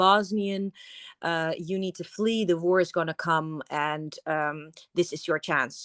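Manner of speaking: normal talking voice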